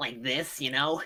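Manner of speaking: heavily nasal put-on voice. Listing the voices and accents they can sort of do, really nasal voice. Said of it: "with a really nasally voice".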